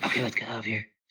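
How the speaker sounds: whispered aside. Giving Annabelle a thumbs up and whispering to her in the scene. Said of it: "and I whisper to her".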